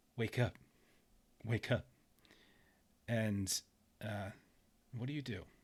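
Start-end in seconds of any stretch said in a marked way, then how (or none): 0.1-1.8 soft, gentle and tender. Narrating a woman tapping the listener's face to wake them, gentle. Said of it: "she's kind of very gently".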